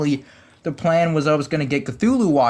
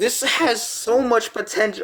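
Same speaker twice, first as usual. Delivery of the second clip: voice cracks, breaking upward mid-line; 7 semitones higher than usual. Speaker pleads with the Spirit, voice cracking. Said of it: "voice crack".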